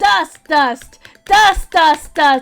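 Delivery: creature-like cartoon voice. Repeating a word into the microphone to dust for fingerprints: sounding like a Pokemon. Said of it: "I sound like a Pokemon right now".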